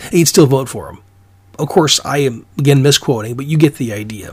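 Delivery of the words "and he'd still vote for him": usual speaking voice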